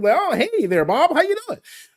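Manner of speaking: very high, switched-up, polite, formal work voice. Showing how one greets a coworker named bob when code switching: code-switching voice. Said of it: "Code switching is real".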